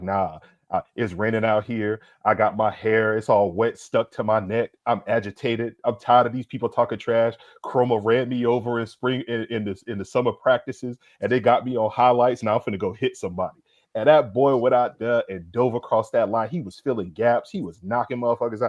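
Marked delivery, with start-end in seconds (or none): none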